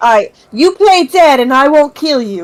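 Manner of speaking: different, put-on cat voice. Voicing a cat in a game who speaks to a rat: different cat voice. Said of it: "why do you sound so different, Whiskers?".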